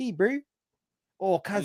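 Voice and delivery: very high, pitched way up, mocking man's voice. Retelling what a man said to him, imitating a really high voice. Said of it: "he had this really high voice".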